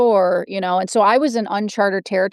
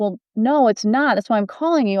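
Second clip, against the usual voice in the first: acted, tearful, words pushed out through crying; 2 semitones higher than usual. Retelling a phone call to a husband about drinking: imitating own past crying. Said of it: "and I'm crying".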